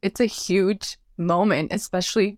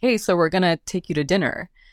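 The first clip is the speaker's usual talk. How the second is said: usual speaking voice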